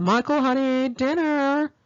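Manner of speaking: acted, piercing, shrill, high yell. Retelling how Raz called Michael to dinner, imitating Raz's shrill yell. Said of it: "yell in a shrill voice".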